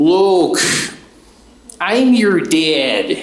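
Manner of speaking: Chicago accent, pitched high and spoken very slowly. Joking that Darth Vader could have sounded Chicago: Darth Vader in Chicago accent. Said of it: "didn't have a Chicago accent. Good thing Darth Vader didn't sound like my Uncle Ed the homicide detective".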